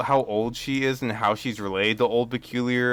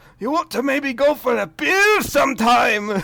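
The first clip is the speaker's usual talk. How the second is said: very high-pitched dwarf character voice; 13 semitones higher, 4 dB louder than usual. Retelling how he asked the pirate queen out, in a dwarf voice. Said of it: "he dwarf voice asks".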